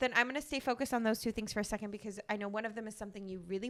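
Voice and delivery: rushed, very fast run-on speech.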